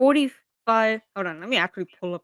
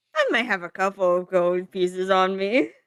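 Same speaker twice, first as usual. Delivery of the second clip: smug, sly, self-satisfied, pleased-with-himself understatement; 3 semitones lower than usual. The narrator speaks as a character answering about gold: smug. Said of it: "gives a smug grin as he just says".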